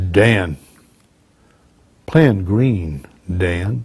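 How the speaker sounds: very cool, calm, low, slow, unhurried voice. Retelling how a man grabbed you by your gear amid shooting, imitating a very cool, calm voice. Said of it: "saying in a very cool, calm voice".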